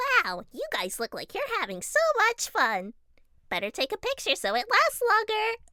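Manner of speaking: bad, horrible high and loud character voice. Practicing a character's voice: horrible Bubble voice. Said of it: "It's a horrible bubble voice".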